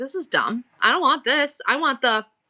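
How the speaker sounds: ordinary talk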